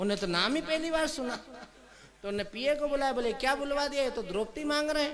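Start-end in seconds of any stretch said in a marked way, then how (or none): none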